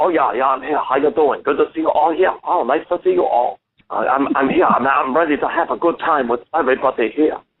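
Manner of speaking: high little puppet voice. On a radio show, bringing out the puppet Peking Duck to greet everyone: Peking Duck puppet voice. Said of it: "your little buddy there, how he's talking".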